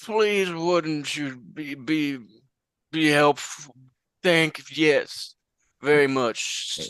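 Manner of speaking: put-on really old man voice. A player character disguised as a really old man asks for a room: really old man voice. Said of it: "disguise self as a really old man".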